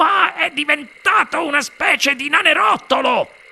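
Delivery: very high-pitched exclaiming voice. A father sees his son appear on the TV screen; exclaimed. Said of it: "esclamò il signor TV".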